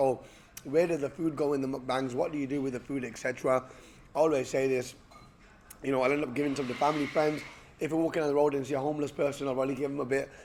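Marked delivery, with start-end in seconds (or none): none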